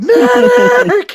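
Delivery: high-pitched, stretched, drawn-out scream. Retelling a film scene where a dying soldier calls out: imitating someone screaming. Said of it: "He's, like, screaming".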